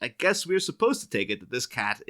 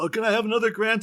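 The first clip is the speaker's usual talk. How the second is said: put-on cartoon bear voice, higher and louder; 13 semitones higher, 4 dB louder than usual. Imitating Knox asking Bruce Wayne for money: Knox impression like Yogi Bear. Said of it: "my Knox impression".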